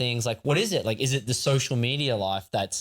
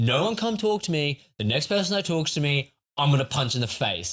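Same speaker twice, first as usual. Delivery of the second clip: put-on angry voice, higher pitch; 3 semitones higher than usual. Quoting a housemate who threatened to punch anyone: imitating an angry Vinny. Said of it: "He's so mad".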